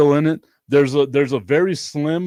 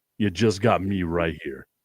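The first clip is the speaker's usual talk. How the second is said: very low, fake seductive, put-on sexy delivery; 9 semitones lower, 5 dB quieter than usual. Joking about ai stealing his voice, pitching to ladies: put-on sexy voice. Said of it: "if you want a voice like this".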